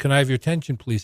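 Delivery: meek, timid voice. Recalling asking a room for attention at the mic; retelling a meek request. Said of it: "I said in a meek voice".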